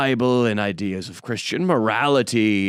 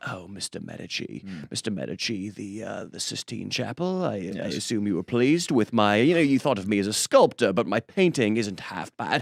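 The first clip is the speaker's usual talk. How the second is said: put-on English accent; 5 dB quieter than usual. Playing an artist addressing Mister Medici, in a put-on English accent. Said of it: "I'm going to speak in an English accent".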